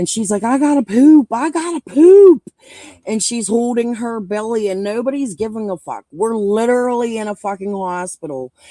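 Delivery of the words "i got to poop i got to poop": very loud, high-pitched screaming. Retelling a woman in labor in a hospital lobby, imitating a labor scream. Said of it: "It was a labor scream".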